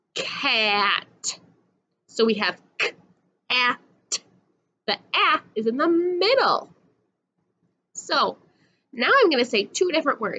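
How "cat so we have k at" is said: very slowly sounded out, stretched, piece by piece. Repeating a word so listeners hear the middle sound: said again slowly. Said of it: "I'll say it again slow".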